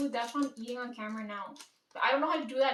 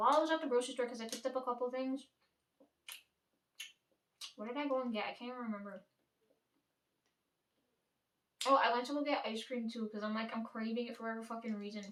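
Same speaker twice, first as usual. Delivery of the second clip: talking with mouth full, quieter; 4 dB quieter than usual. Telling about a trip to the grocery store, talking with mouth full. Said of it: "I'm gonna be talking with my fucking mouth full".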